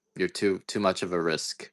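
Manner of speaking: normal talking voice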